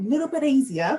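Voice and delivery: high, loud, eager, genuinely keen lilt. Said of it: "if you can't tell by the inflection in my voice".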